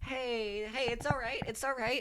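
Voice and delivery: gentle, calming, soft and soothing voice. A player's character tries to calm a companion who turned suddenly: soothing. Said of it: "when you're trying".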